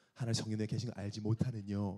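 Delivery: low, soft, gentle narrating voice. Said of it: "되게 부드럽게 읽는다고".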